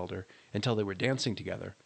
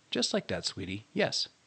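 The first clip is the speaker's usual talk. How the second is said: ordinary delivery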